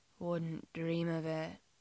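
murmured softly on an exhale. A man answers the one digging an elbow into his stomach: murmured on an exhale. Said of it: "Jim murmurs".

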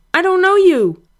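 shrill, terrified, very high-pitched cry. Narrator voicing a man being shaken and interrogated, in a high, frightened voice. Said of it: "Luke cried in a high, frightened voice".

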